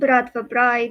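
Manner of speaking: put-on Russian accent. Naming the title of a Mafia book series: Russian accent. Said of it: "Wow, Russian accent".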